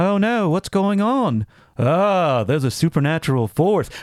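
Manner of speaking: flat, monotone, affectless, unreacting deadpan delivery. Showing how the actors in these movies talk, Bressonian deadpan. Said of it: "speak in almost a Bressonian deadpan".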